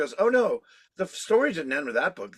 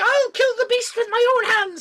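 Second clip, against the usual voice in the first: put-on over-the-top, brassy, loud Irish accent, very high; 7 dB louder than usual. You are describing a hilarious over-the-top woman; quote her, imitating a brassy Irish accent. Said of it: "she's got that little Irish accent".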